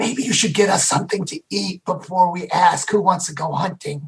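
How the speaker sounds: whispered aside. Speaking in character to a companion before camp, whispering. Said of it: "I whispered to Thrall".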